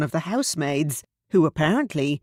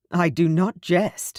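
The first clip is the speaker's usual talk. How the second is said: grumbled, defensive tone. Reading a novel aloud, a man denies joking: muttered defensively. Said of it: "Will muttered defensively".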